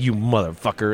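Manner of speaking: muttered under breath. Imagining how a man might react, the speaker mutters his curse under his breath. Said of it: "he might say something under his breath like".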